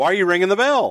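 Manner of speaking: put-on shouting. Retelling yelling at the timekeeper about the bell: retelling own yell. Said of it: "And I'm yelling at the timekeeper".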